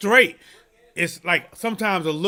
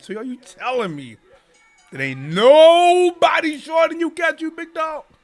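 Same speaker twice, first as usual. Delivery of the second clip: sly swooping insinuation, drawn-out nobody; 10 semitones higher, 5 dB louder than usual. Retelling a chat member's question, imitating a knowing, insinuating tone. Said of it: "he was talking like he knew something".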